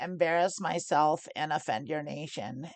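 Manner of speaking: normal talking voice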